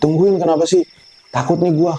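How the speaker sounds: high, mock winded, gasping, out-of-breath panting. Telling a story, acting out a man reaching his friends, imitating someone panting. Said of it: "sambil ngos-ngosan".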